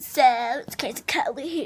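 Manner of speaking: surfer-style voice. Speaker introducing themselves, jokingly talking like a surfer dude. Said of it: "I'm talking like a surfer dude".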